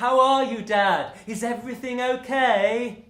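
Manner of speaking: put-on condescending tone. A father imitates his son checking on him, mocking a patronizing tone. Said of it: "a tone of voice which suggested he thought I was either deaf or very, very old".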